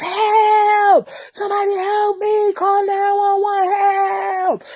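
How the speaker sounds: high, drawn-out screams, each word stretched long. Recounting being hurt with her son nearby, retelling screaming for help. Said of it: "to the top of my lungs".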